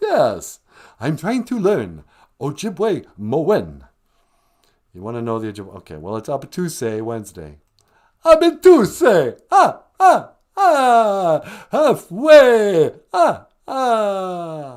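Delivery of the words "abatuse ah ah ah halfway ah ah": every ah drawn out, loud and slow. The Count calls in and reacts to the word of the day: Count von Count voice. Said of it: "the Count from Sesame Street's on the line".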